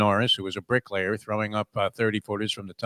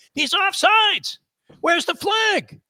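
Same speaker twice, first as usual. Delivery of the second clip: mock very high-pitched, stretched-out, drawn-out scream; 6 dB louder than usual. Retelling jumping up on a team bus: imitating someone screaming. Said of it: "I start screaming".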